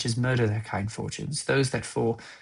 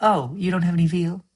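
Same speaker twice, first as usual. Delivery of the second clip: loud, rising, delightfully condescending, patronizing tone; 7 semitones higher, 5 dB louder than usual. Reading a line about veal, more questioning: delightfully patronizing, questioning. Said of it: "delightfully patronizing. Like".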